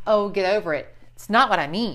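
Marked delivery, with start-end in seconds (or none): none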